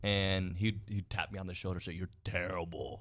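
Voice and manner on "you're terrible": quieter, kidding, loving put-on voice. Retelling what Dirk told them after their jokes failed: imitating Dirk. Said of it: "in his Dirk voice".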